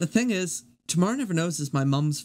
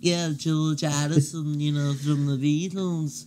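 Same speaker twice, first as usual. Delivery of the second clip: congested voice, as with a cold. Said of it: "George always sounded like he had a cold".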